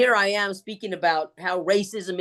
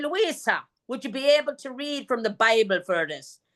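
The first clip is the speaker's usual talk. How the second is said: put-on Irish accent, pitched up; 5 semitones higher than usual. Retelling how an Irish nun asked for a Bible reading: imitating an Irish nun. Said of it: "all of our nuns that taught us were Irish".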